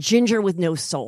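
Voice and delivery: ordinary talk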